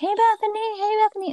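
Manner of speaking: very high, squeaky cartoon character voice. Describing how the trees and plants greet her, in a high-pitched cartoon character voice. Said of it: "like this really high pitched voice. That's like a cartoon character".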